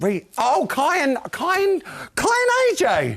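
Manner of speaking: loud, shocked tone with rising pitch.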